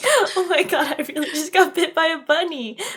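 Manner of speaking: play-acted tearful laughter, crying and laughing, shocked. Speaker recalls their own reaction once the pain set in, retelling laughing while crying. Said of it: "crying and laughing at the same time".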